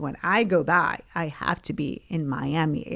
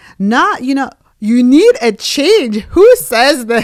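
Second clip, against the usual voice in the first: put-on angry, scolding father voice, higher and louder; 8 semitones higher, 15 dB louder than usual. Retelling how dad scolded after the visa interview: imitating dad scolding. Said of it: "hits me upside down the head, was like".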